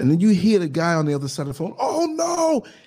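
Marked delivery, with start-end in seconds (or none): 1.8-2.6 very high, shrill scream. Retelling a phone call overheard on a bus: imitating someone screaming. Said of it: "It's so loud the way he screams".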